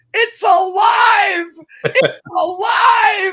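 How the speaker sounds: very high, very loud, slow, drawn-out shriek. Retelling how Christine screamed on seeing the chipmunk move: imitating Christine screaming. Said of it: "I hear Christine screaming".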